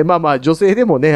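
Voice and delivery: ordinary talk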